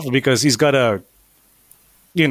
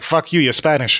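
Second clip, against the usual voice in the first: ordinary delivery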